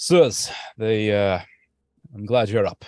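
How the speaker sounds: loud, urgent voice. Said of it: "Lower your voice".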